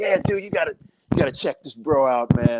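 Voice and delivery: laid-back, relaxed beach-bro surfer dude voice. Retelling what he said about checking out a drummer, in a surfer dude voice. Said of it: "he sounded like a surfer, dude".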